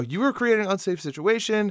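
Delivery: high-pitched yelling. Retelling yelling back at a pulled-over driver's officer: retelling own yell. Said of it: "yelled back at him".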